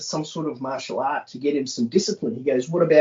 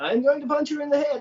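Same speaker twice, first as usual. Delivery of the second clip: high, cartoonish, laid-on Eastern European accent; 12 semitones higher than usual. Retelling what she said when the speaker started Krav, in a Boris and Natasha voice. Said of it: "in that Boris and Natasha voice".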